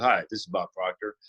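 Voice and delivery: deep, dropped-pitch voice. Retelling how Bob Proctor came on the phone and introduced himself, in Bob Proctor's deep voice. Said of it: "with that deep voice".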